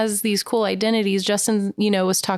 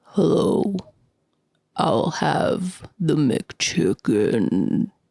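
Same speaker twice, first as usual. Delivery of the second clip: deep, very slow, drawn-out monster voice; 5 semitones lower than usual. Ordering from McDonald's after being asked to: Vecna voice. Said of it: "order from McDonald's in your Vecna voice".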